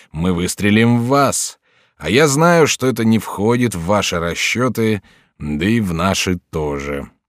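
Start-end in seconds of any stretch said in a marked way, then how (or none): none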